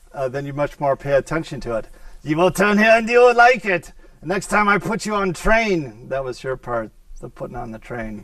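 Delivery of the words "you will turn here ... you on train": put-on German accent, male, higher. Imagining directions given in a German male voice impression. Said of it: "if it was a German male voice".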